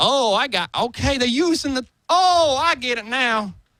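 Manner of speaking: very high country bumpkin voice. Retelling how audience members reacted once they understood: imitating a redneck voice. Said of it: "I'm talking like a redneck".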